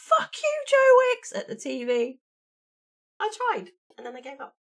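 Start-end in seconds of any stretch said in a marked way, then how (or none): 0.0-1.3 huffing, shrill, very high and very loud scream. Recalling doing a TV workout, retelling screaming at the TV. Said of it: "I'm huffing and I'm puffing and I'm screaming".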